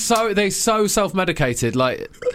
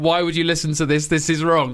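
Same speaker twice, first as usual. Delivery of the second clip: plain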